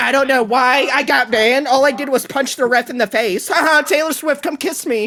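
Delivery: derisive, taunting put-on voice. Mocking the player's interview after his ban: mocking imitation of the player. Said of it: "This is him in the interview".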